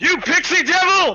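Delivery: very high, loud, shrill screaming outburst at full blast. Narrating a fight, voicing the attacker as he swings at a player, screaming. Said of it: "and he screams".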